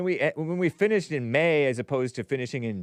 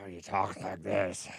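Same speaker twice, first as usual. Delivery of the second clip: mock nasty smoker's voice, quieter; 6 semitones lower, 8 dB quieter than usual. Complaining about a man's voice, the speaker imitates his nasty smoker voice. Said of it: "smoker voice?".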